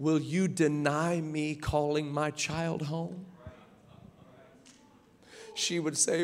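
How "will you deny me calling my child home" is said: imitated gentle speaking, quieter. Retelling how the Lord answered her questions: imitating someone speaking gently. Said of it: "the Lord would say to her so gently".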